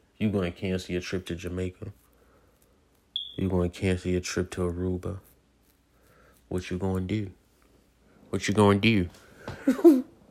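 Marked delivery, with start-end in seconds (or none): 6.5-10.1 put-on Baltimore accent with swooping pitch. Speaker repeats a question, then notes it was their Baltimore voice; Baltimore accent. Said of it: "In my Baltimore voice".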